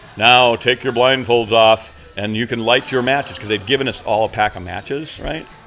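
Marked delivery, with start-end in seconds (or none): 0.2-3.4 stentorian, booming, theatrical stage voice. Retelling an unseen voice addressing the group in a tunnel; booming Shakespearean voice. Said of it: "booming Shakespearean voice goes".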